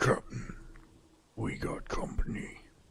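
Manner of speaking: barely voiced, low whispered mutter under the breath. Storyteller voicing a man who hears a thump, warning the captain under his breath. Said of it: "very low under his breath he goes".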